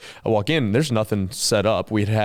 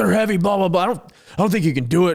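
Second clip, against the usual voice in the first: mock angry father voice, very high-pitched; 9 semitones higher than usual. Retelling a disagreement about carrying things in, the speaker quotes their dad; imitating dad's angry voice. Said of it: "I shouldn't use the angry voice".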